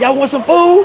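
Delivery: high, loud yelling call.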